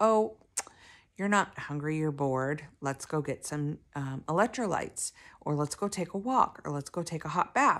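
plain

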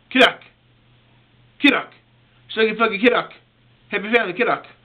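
rapid-fire delivery. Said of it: "You say it real fast".

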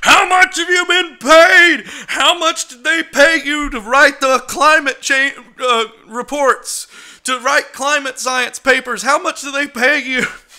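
very loud, shrill, enraged screaming rant. Retelling what a guy at the craps table screamed: imitating a guy screaming. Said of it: "the guy started screaming".

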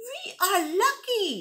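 very high-pitched, exclaiming voice. Reading a fable aloud, voicing the bandicoot answering the wolf, exclaiming. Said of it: "the bandicoot exclaimed".

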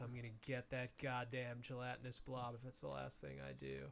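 muttering under breath. Narrator voices a green guy dragging himself forward, muttering under breath. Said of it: "he's muttering under his breath".

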